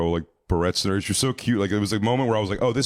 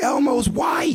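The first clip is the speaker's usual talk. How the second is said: put-on shrill, very high child's shriek; 4 dB louder than usual. Retelling a kid at a party discovering the costume: imitating a kid screaming. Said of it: "lifts the sleeve up of the thing and screams".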